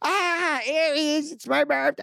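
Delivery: loud, very high, drawn-out annoying scream. Retelling people who spotted aries and wanted a picture, imitating loud annoying screaming. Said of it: "they started screaming like really loud and annoying".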